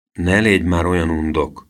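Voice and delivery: plain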